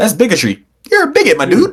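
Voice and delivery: jokey, swooping delivery. Retelling a scene while imitating a character: comical line delivery. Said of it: "You gotta say it with the comical".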